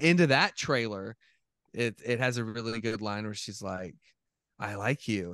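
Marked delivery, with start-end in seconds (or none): 4.6-5.3 eerie, unsettling, creepy horror-movie voice. Quoting a line from a horror movie trailer: imitating a creepy voice. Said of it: "in a creepy voice".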